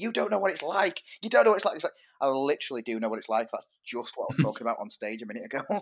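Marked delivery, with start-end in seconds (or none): 0.0-1.8 very high, loud, repeated yelling outburst. Retelling how someone came up after a gig yelling: retelling someone yelling. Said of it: "they were yelling".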